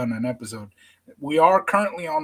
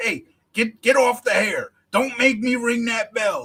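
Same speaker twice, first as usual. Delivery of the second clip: mock, high, yelling referee voice; 8 semitones higher than usual. Describing a man practicing being a ref, yelling at nobody: retelling a ref's yell. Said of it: "he's yelling at nobody".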